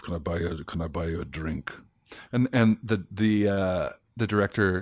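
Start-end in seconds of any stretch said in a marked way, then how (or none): 0.0-1.7 put-on English words spoken with a German accent. Retelling a line from a first take on set: German accent. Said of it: "with a German accent".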